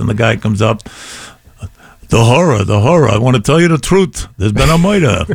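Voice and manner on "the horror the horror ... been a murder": put-on New York-accented delivery. Imitating a fellow actor on stage: Jackie Mason voice. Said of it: "they all sounded like Jackie Mason".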